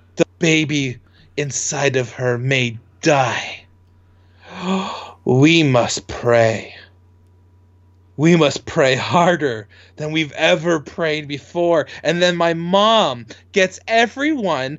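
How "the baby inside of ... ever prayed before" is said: put-on breathy, dramatic starlet voice. Retelling what mom said in a waiting room: imitating mom's dramatic Marilyn Monroe act. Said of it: "serious Marilyn Monroe performance".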